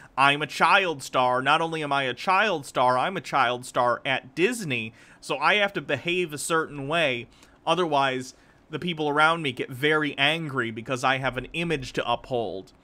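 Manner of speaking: plain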